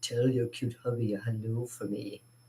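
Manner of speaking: very quiet, low, drowsy, slumberous hushed murmur. Retelling what a woman said leaving a casting office: low slumberous voice. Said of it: "her low, low, sh-, lubrous voice say".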